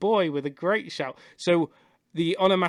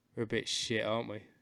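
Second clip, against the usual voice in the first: very quiet, low, glum, dejected, deflated mutter; 6 semitones lower, 10 dB quieter than usual. Describing a match at Old Trafford, the speaker mimics home fans: imitating glum Mancunians. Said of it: "these glum Mancunians going".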